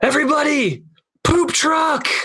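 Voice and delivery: high-pitched mock scream. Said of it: "he screams".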